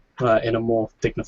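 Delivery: plain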